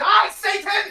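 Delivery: furious, high, drawn-out battle cry.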